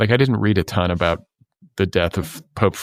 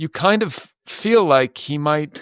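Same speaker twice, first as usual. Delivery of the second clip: put-on halting, rhythmic voice, higher pitch; 8 semitones higher than usual. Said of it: "that is one of your better impressions".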